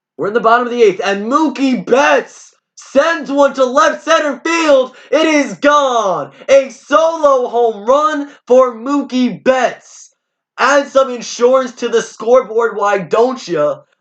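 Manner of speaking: very high, loud, thrilled announcer-style screaming. Calling a home run in the bottom of the eighth, screaming with excitement. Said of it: "I'm sorry if I'm screaming, but I'm excited".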